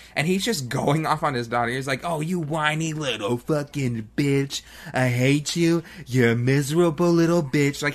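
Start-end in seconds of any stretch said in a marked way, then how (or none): 2.1-7.9 slow rant with every insult dragged out. Describing a movie father going off on his daughter, doing a Donald Trump impression. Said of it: "he's speaking like Donald Trump".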